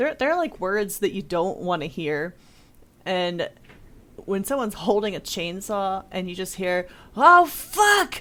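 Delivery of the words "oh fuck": very high, top-of-lungs alarmed yell. Retelling what a man holding a chainsaw yelled, retelling a top-of-lungs yell. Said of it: "yells at the top of his lungs".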